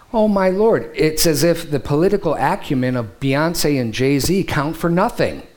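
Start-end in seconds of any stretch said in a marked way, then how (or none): none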